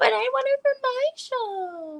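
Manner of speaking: put-on very high little baby voice, drawn-out show. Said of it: "she responded in that little baby voice".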